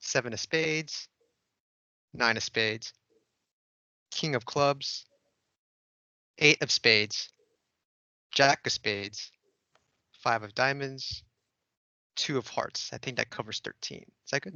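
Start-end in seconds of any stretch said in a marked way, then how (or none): 0.0-12.9 very slow, drawn-out, careful reading voice. Reading card names aloud so the other person can guess their card, reading very slowly. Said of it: "read the names of the cards very slowly".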